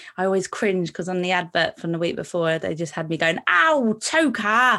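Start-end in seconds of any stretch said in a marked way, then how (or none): 3.5-4.8 put-on heavy London accent, raised pitch. Recalling your line on the advert the week before, strong london accent. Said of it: "I sounded so London".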